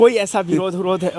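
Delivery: normal talking voice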